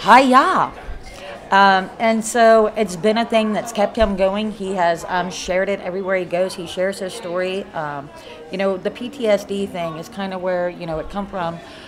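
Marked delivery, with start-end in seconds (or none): 0.0-0.7 loud yell at a high pitch. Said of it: "yelled out".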